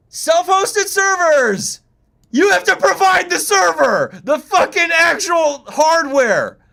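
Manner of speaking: very high-pitched, shrill, loud ranting yell. Standing right beside another person, reacting to what they are looking at, yelling. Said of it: "you don't have to yell".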